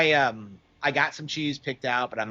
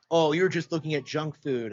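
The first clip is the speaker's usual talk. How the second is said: mock scornful dismissive sneer, high pitch; 5 semitones higher than usual. Retelling what the mom said about junk food: imitating a sneering remark. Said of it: "my mom sneers at me".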